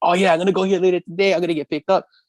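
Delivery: excited gushing chatter. Retelling what a friend said: imitating an excited friend. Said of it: "He's all excited".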